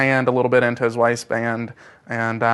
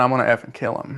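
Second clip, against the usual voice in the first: ordinary talk, nothing marked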